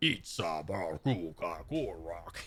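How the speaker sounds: not-very-good low, hushed dinosaur creature voice. Gamer saying a faction leader's name aloud while playing, in dinosaur voice. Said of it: "That's my dinosaur voice".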